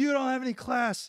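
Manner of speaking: very high, very loud, furious ranting outburst. Retelling how Pat Tillman reacted when his car was roasted: imitating Pat Tillman furious. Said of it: "And Tillman hits the roof".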